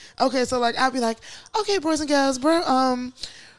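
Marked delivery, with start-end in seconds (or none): 1.6-3.1 higher-pitched silly British accent. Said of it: "So I'll just bust out in a British accent".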